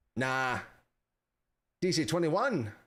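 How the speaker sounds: Australian accent, short line. The speaker is asked to answer in their Aussie accent; Aussie accent. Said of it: "in your Aussie accent?".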